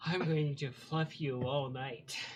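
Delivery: hulking, massive female orc character voice. Voicing a massive female orc smiling down at a player: massive female orc voice. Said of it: "this massive female orc".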